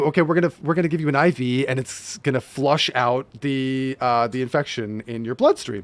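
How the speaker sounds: normal talking voice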